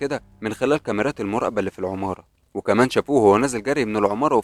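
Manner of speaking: ordinary delivery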